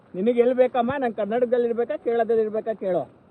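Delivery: plain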